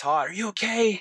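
high-pitched yell. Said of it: "I'm yelling".

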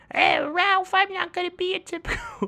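very high, slow, stretched-out cartoon voice. Imitating Vanellope from the ending of Wreck-It Ralph: Sarah Silverman voice as Vanellope. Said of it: "that voice caught me off guard".

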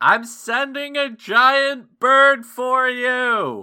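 very high, very slow, drawn-out distant yell. Voicing Athen calling to Caden from the distance: Athen yelling from afar. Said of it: "you hear Athen in the distance yelling".

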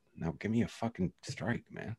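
very quiet, under-the-breath, muttered grumble. Speaker recalls a kid stepping into the box for the next pitch; imitating muttering under breath. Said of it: "you can hear under his breath".

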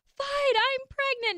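play-acted angry outburst, very high and shrill. Retelling slapping a positive test on his chest: retelling an angry outburst. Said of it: "I just got so mad".

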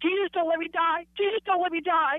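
play-acted, high, screamed-out yelling, over and over. Retelling spinning out on the interstate, imitating own past screaming. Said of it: "I just was screaming out".

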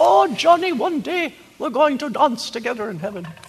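put-on Dutch accent. Speaker quoting what she told him the last time he saw her, in thick Dutch accent. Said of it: "that thick Dutch accent".

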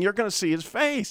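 acted, all-out uncontrolled scream from deep inside. Retelling own words screamed in bed at night: retelling a scream. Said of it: "I was just totally screaming".

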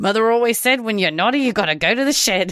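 put-on high Australian accent. Quoting a favorite line from a movie, in Kevin Kline's Australian accent. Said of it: "he's like doing this Australian accent".

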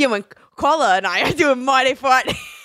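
put-on Jersey accent. Imitating a co-host's old podcast voice: imitating a jersey accent. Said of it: "Your Jersey accent".

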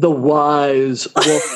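low radio announcer voice, "wise" stretched out. Asked by the other speaker for a radio voice, the speaker uses a low radio-type voice. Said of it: "I'll take care of that for you".

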